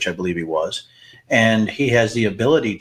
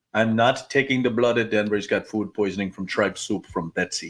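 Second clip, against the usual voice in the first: badly butchered put-on Romanian vampire accent; 4 dB quieter than usual. Joking that Dracula refused the speaker's blood, the speaker does a bad Dracula accent. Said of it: "That is the worst freaking accent".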